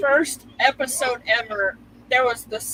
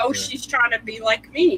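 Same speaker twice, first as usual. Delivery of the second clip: plain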